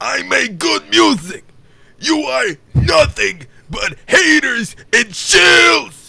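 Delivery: belted out high and loud. Others asked to hear the impression and you take your turn: Cyrax impression. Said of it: "Cyrax impression".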